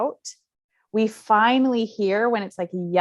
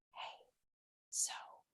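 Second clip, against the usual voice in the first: intimate, drawing-close whisper. Retelling leaning in when she got loud: imitating own past whisper. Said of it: "and whisper".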